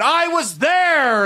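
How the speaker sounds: very high, shrill, loud screaming. Retelling a store customer's rant about alien abduction, imitating a man screaming. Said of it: "And he's just like screaming".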